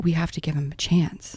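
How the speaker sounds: usual speaking voice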